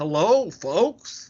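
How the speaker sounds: put-on hammy, over-dramatic Southern accent laid on thick. Describing how Alex sounds when greeting people, Alex's over-dramatic Southern accent. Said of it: "he has this very over dramatic Southern accent".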